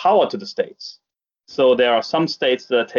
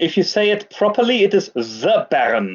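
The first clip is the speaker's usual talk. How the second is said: pitched-up fake German accent; 7 semitones higher than usual. Playing the Baron who joins from the castle: put-on accent as the Baron. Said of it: "I'm detecting an accent as well".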